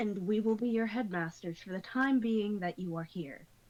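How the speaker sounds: low, cool, crisp delivery. A character addressing newcomers beside his twitchy partner, in a low, cool, crisp tone. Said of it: "he speaks in a low, cool, crisp tone".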